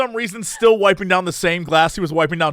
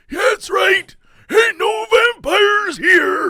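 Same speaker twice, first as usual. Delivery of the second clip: put-on squeaky, very high old man voice; 4 dB louder than usual. Voicing the second old man in the bar: other old man voice. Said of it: "he's the other old guy, but he has, like, the other voice".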